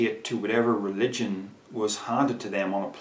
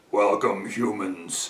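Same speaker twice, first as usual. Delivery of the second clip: put-on otherworldly voice pushed through the throat; 2 semitones lower than usual. Explaining how a channeler's voice changes, speaker demonstrates: Bashar voice. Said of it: "I've obviously done that with my throat. My voice does not normally sound like this".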